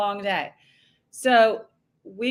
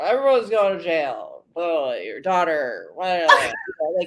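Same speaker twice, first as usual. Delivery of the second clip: put-on garbled drunken slur, much lower; 4 semitones lower than usual. Speaker retells a man's answer when asked if he had something to say, imitating a garbled drunk slur. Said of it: "whatever garbled drunk slur that was".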